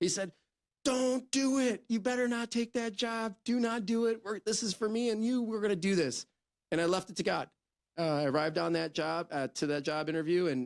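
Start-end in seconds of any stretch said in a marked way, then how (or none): 0.8-6.3 acted-out screaming, high pitched. Retelling a partner's reaction on the phone: imitating Carlos screaming. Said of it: "he infamously screaming".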